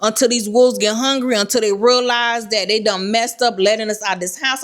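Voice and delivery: ordinary talk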